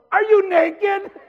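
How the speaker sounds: very high, shrill, very loud yell. The front desk lady spots the locked-out man, retelling a yell. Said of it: "she yells".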